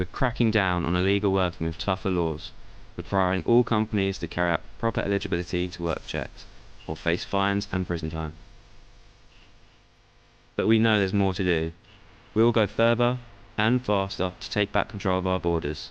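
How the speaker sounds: bored-sounding voice. A voiceover narrator reading the message, bored. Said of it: "he sounded bored out of his brain".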